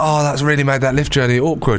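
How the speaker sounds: ordinary talk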